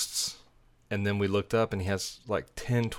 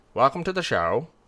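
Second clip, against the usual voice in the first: put-on British presenter voice, higher and louder; 5 semitones higher, 6 dB louder than usual. Imitating a TV show's introduction: Julian Fellowes impression. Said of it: "That's how he talks".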